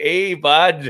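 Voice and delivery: put-on loud, high Canadian twang. Describing how people near Burlington, Vermont talk, with a Canadian twang. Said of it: "they get like that Canadian twang".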